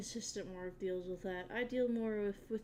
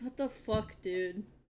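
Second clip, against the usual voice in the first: acted, mock annoyed tone; 4 dB louder than usual. Voicing what an annoyed character thinks: imitating an annoyed reaction. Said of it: "He's annoyed".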